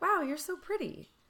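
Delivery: upbeat positive tone. Acting out someone's hypothetical compliment in public: acting out a positive inflection. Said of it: "the inflection seems positive".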